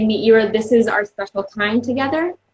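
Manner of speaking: normal talking voice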